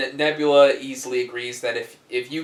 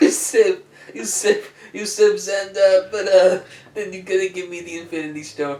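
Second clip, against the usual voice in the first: put-on loud, raised-pitch, old-Hollywood leading-man voice; 7 semitones higher, 5 dB louder than usual. Acting out a deal over the Infinity Stone while recounting the story, sounding like Marlon Brando. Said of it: "Why are you making him sound like Marlon Brando?".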